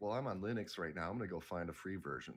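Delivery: ordinary talk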